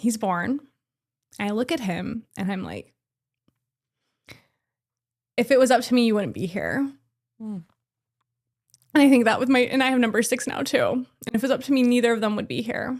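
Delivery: deeply moved, emotional voice. A parent recalls a baby's birth: really emotional. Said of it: "I'm gonna get really emotional".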